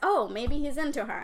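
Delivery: ordinary delivery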